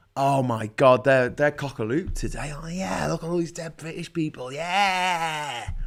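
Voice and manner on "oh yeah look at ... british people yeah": soft, sneering put-on commentator voice. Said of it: "I'll do their voices better".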